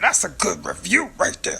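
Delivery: low-pitched voice, rough yet soft. Talking about people coming back for a second year, in a Cookie Monster voice. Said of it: "Cookie Monster voice".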